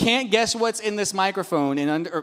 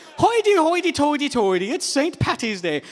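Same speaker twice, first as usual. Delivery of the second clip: jokey put-on Irish accent, pitched up; 7 semitones higher than usual. Announcing Saint Patrick's Day to the audience, the speaker puts on an Irish accent. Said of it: "that was my uh, Irish accent".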